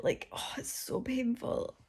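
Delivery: pained, aching, very quiet whispered murmur. Talking to her YouTube viewers while in a lot of pain. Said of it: "I'm like in a lot of pain".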